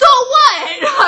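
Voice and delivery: very loud, high-pitched, shrill, furious yell. Reliving a run-in with another adult for her listeners, yelling. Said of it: "now I'm yelling at you guys".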